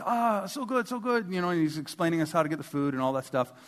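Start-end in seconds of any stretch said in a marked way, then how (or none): 0.0-1.3 slow, high, halting broken English. Retelling what the server said at a birthday dinner: imitating Pita's broken English. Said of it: "he was very broken English".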